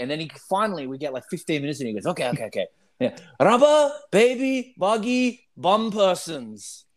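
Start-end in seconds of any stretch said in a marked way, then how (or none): 3.4-6.8 put-on broken English with a Japanese accent. Retelling a man translating japanese to english, imitating broken japanese english. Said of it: "with his broken English".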